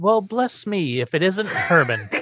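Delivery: put-on British accent. Recapping a character's entrance in an episode, imitating a british accent. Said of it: "He's got a British accent, too".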